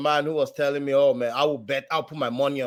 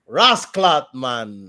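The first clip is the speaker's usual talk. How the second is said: put-on Jamaican accent, louder; 5 dB louder than usual. Answering a request for a best Jamaican accent: Jamaican accent. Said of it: "give me your, uh, best Jamaican accent".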